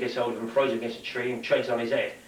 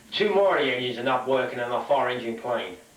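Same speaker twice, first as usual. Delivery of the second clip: plain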